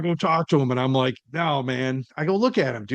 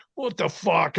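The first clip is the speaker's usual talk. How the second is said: put-on fed-up, angry, pissed-off outburst; 2 semitones higher than usual. Retelling how a friend reacted after walking away: imitating an angry friend. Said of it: "he's all pissed off".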